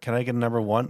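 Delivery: normal talking voice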